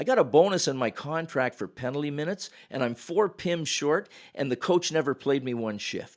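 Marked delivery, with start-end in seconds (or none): none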